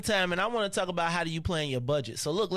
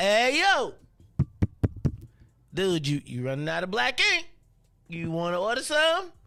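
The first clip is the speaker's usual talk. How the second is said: automated computer prompt voice, alert tone; 4 dB louder than usual. Retelling how the computer warned about low ink, imitating the computer's prompt. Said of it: "Computer come up again and be like".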